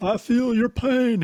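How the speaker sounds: bad put-on voice, very high, very slow, loud. Empathizing with the other speaker in a Bill Clinton impersonation. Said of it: "That's a terrible Bill Clinton impression".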